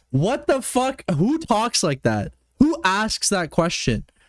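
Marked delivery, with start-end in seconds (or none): none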